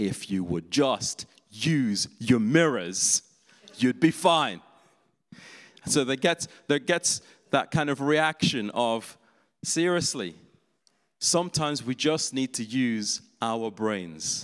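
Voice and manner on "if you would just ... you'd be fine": exasperated, fed-up outburst with rising pitch. Retelling a friend's reaction to the praying while parking: imitating an exasperated outburst. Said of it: "my other friend lost it and said".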